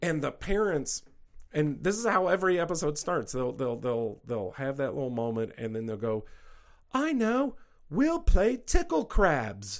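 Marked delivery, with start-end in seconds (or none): 6.9-9.8 very high, very slow, thick, swooping Australian drawl. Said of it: "thick Australian accents".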